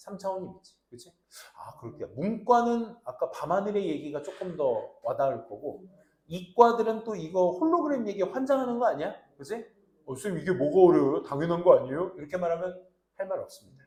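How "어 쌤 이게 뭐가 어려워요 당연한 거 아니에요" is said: put-on loud, challenging teenage student voice. Imitating a science-track student who finds the topic obvious: imitating a science-track student. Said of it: "이과생을 성대모사 하는데".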